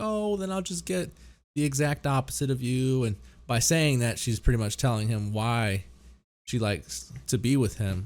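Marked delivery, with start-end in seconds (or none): 0.0-3.0 heavy, dry, mocking sarcasm. Retelling a scene where she answers him back; mock-sarcastic retelling. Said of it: "she's being very sarcastic about it".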